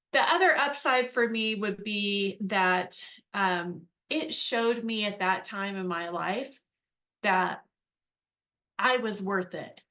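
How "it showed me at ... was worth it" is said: halting, emotional, faltering speech with voice breaking. Speaker reflects on the upside of paying for art school: getting a little emotional. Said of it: "I'm getting a little emotional".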